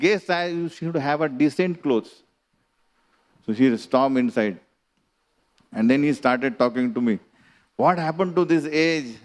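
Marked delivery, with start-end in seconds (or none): 0.0-2.2 put-on stern scolding, half-called out, contained. Recounting a man shouting at a woman about her clothes; retelling a shout. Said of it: "he shouted again".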